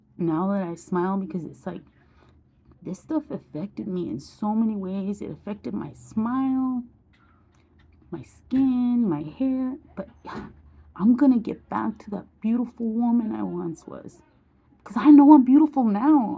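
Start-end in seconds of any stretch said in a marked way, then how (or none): 10.0-16.4 raised, heartfelt, emotional voice. Speaker telling how this stuff affected her smile, skin and hair: emotional. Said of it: "I'm getting emotional now".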